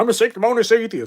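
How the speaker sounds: shrill, booming, high and loud cartoon dog voice. Acting out a Family Guy argument, imitating Brian from Family Guy. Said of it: "that's my imitation of".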